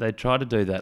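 ordinary delivery

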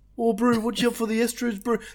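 put-on New Zealand accent. After the talk turns to accents, the speaker puts on a new zealand accent. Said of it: "They're Kiwi!".

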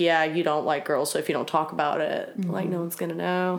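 plain

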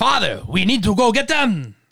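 put-on horrible clumsy accent, pitch swooping wildly up and down. Retelling a myth, the speaker voices the god in a horrible Thor accent. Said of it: "That's a horrible accent".

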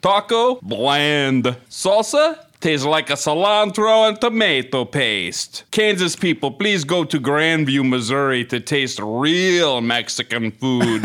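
put-on Italian accent. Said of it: "now it's Italian".

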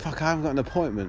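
ordinary talk

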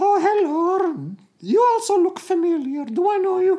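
squeaky, high-pitched little cartoon character voice. Performer playing one of two characters meeting in a scene, high-pitched character voice. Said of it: "It's two characters with high-pitched voices".

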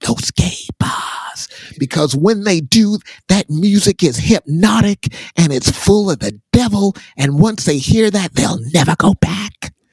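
high, every word deliberately and carefully enunciated. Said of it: "he whispered, uh, to enunciate".

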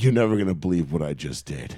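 mock trembling voice. Retelling what he said on the phone after the drive, imitating a shaking voice. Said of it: "your voice was like shaking".

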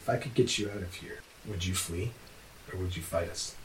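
hushed whisper, in character. Voicing a character who nudges a prisoner from behind: whispering in character. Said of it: "he's kinda whispering it to you".

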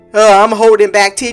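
ordinary talk

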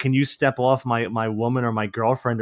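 ordinary delivery

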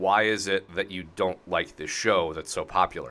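ordinary talk

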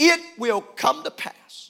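preacher voice with pulpit-style inflection. Showing how a preacher in a Pentecostal church would say it, Pentecostal preacher inflection. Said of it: "with the right voice inflection in a Pentecostal church".

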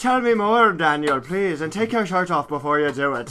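bad put-on Irish accent. Speaker redoing an old bit for listeners, Father McFeely in a bad Irish accent. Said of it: "my shitty Irish accent".

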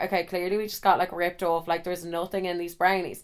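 ordinary delivery

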